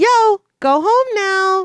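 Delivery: tiny, cute, adorable voice, very high. Recapping a story, the narrator voices Gizmo's line in Gizmo's adorable tiny voice. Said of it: "Gizmo speaks up in his adorable tiny voice".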